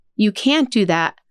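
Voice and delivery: ordinary talk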